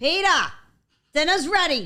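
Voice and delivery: loud, high-pitched calling voice. Asked to say the line really loud into the mic as yourself, really loud call. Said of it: "in the mic really loud".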